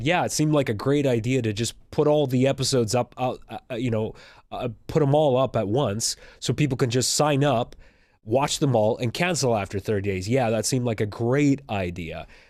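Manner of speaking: ordinary talk, nothing marked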